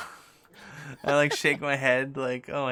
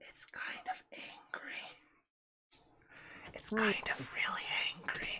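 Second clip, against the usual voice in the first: hushed, very quiet, barely-there whisper; 8 semitones higher, 14 dB quieter than usual. Voicing a character who backs away and warns the others: whispering. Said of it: "and I whisper".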